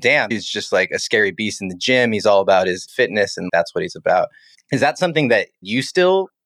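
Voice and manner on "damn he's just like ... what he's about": normal talking voice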